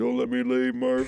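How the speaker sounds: creaky, raspy voice, pitched a touch high. Recalling a movie line as Matthew McConaughey: Matthew McConaughey impression. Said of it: "That was a pretty good impression".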